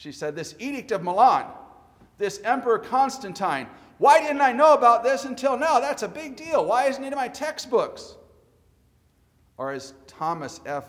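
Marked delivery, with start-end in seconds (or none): 0.4-8.2 put-on furious, very loud, high angry outburst. Quoting what an angry young lady said to you, imitating an angry young woman. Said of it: "She was very angry".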